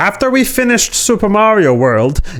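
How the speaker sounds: put-on playful character voice. Quoting Miyamoto's words, done in a playful Miyamoto voice. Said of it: "a fun voice for Miyamoto".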